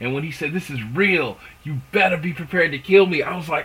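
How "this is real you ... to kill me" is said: put-on gravelly, raspy New York accent. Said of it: "that gravelly, raspy New York accent".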